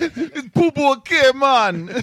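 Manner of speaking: loud, very slow, fake Jamaican accent. Redoing another person's line in a put-on Jamaican accent. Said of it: "with a Jamaican accent".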